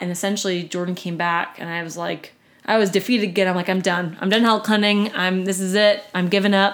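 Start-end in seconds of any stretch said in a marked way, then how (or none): none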